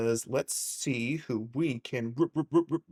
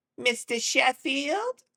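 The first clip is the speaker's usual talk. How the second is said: raspy voice, very high and loud; 14 semitones higher, 5 dB louder than usual. Greeting everyone, then trying out a Fran Drescher impression. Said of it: "got hit in the throat with a baseball bat".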